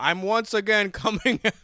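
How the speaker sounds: put-on thick Brooklyn accent. Quoting a meme line, imitating Bernie Sanders. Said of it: "He does that thick, like, New York accent".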